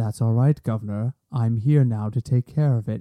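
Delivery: low, utterly calm, menacing voice. Describing a villain walking into a room, imitating Thrawn's calm voice. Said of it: "you hear this calm voice go".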